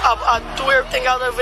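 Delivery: normal talking voice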